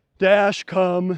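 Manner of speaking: dull, flat, unenthusiastic call with no excitement. Teaching dog owners, showing the wrong way to call the dog: flat, unenthusiastic. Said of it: "You need excitement".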